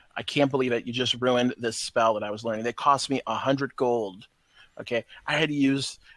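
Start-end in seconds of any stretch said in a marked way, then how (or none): none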